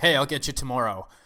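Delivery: sarcastic, snarky, dismissive tone. Retelling a movie scene where a character passes an old man: imitating a snarky remark. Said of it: "he very snarkily tells him".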